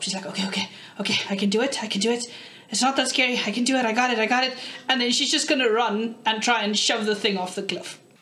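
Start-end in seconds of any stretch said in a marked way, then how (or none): 0.3-4.6 put-on character voice, hyped up. A player voices Daphne before she charges the creature: Daphne psyching herself up. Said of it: "(opening words) everybody, and welcome to our session of Dum Dum Dime, an all-female, all-awesome podcast, running an interactive D&D session for those of you who are brave enough to join us on our ad".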